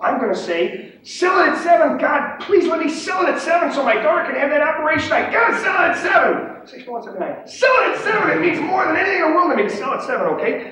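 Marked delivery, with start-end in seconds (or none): 1.0-10.3 mock, very high, loud, shrill screaming. Describing the pit, acting out screaming his own sell order. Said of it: "And I'm screaming it and screaming it".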